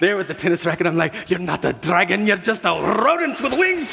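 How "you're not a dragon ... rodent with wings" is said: put-on Scottish accent, pitched up, giggly fright. Retelling a scared moment holding a tennis racket, in a Scottish accent. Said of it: "I start speaking in a Scottish accent".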